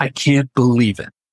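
put-on breathless, out-of-breath speech. Retelling a professor who ran across campus to a student's dorm: imitating someone out of breath. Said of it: "out of breath, can barely speak".

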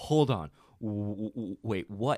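halting, slow, flustered stammer, freaked out. Retelling own reaction alone in the bar: imitating own freaking out. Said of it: "I freaked out in the bar by myself".

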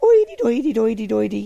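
puppet voice babbling nonsense gibberish. Describing a Muppet video from the video store: Swedish Chef voice. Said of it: "the Swedish Chef".

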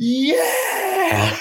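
very enthusiastic, high-pitched yell. Retelling cheering at a rival fan after the win: retelling an enthusiastic yell. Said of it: "real enthusiastically".

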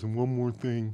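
put-on drunk voice. Retelling what he said as they got out of the car, imitating his drunk voice. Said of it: "in his drunk voice".

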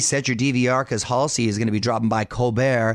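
ordinary talk, nothing marked

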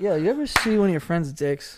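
relaxed, put-on casual voice. Imitating a friend at the others' request: imitating Danny, zero urgency. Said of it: "He's like".

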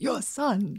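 tentative, hesitant attempt in chest voice. Trying a Christopher Walken impression after being asked to. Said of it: "Not bad".

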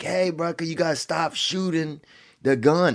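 acted loud calling out. Retelling calling out to people shooting into the river: retelling own yell. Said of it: "So I'm yelling".

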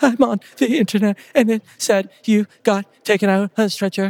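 mock crying hard, high bawling sob-speech. Retelling a phone call with his wife, imitating her bawling. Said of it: "she's bawling".

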